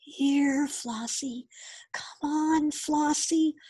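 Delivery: gentle, soft, very slow, drawn-out calling. Reading a story, a boy calls a lamb out of a sleeping dragon's cave: called softly. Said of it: "the boy called softly".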